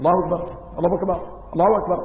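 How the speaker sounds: hurried, rushed, cut-short, clipped phrase. Showing how the takbir should not be shortened: rushed, clipped takbir. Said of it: "ويسن ألا يقصر التكبير بحيث لا يفهم".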